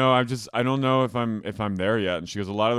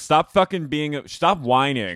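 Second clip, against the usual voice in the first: high-pitched, stern, acted-out yelling; 5 semitones higher, 4 dB louder than usual. Retelling how Farrah yelled at a crying castmate: imitating Farrah yelling. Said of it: "yells at Taya for crying".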